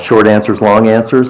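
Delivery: ordinary talk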